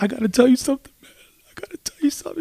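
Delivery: mock, breathy, whispered, tearful pleading. Retelling a man at a bachelor party pulling his friend aside: imitating a man crying, pleading. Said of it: "He's like crying".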